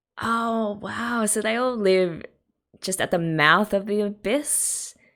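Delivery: amazed, taken-aback, high-pitched surprised voice. Reacting to an opening sequence, breaking off mid-sentence, surprised. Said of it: "[surprised sound]".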